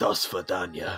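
whispering in character. Setting down an unconscious enemy in the game: whispering in character. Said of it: "I whisper in his ear".

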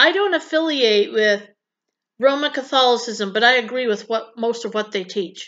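normal talking voice

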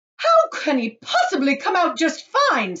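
very loud, high, sharp snapping retort. A mother answers a man reassuring her about her son, snapping. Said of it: "snapped Mrs. Gloop".

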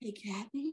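quiet half-whispered voice. Repeating how the other speaker just said the name: imitating a half-whisper. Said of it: "You sounded like flowers in the attic".

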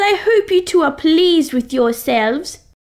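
speaking in a put-on British accent. Speaker addresses two others in a british accent. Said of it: "Are you speaking in a British accent?".

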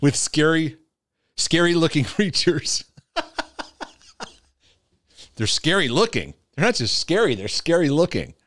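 giggling talk breaking into laughter. Talking about their own church and apologizing for laughing, laughing while speaking. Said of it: "I'm sorry, I'm laughing".

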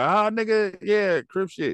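high, defiant voice.

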